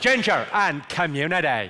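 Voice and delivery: imitated Belfast accent. Performer teaches the crowd a practice phrase; Belfast accent. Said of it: "the phrase I use to get the Belfast accent right".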